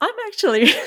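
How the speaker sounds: high, loud speech while laughing.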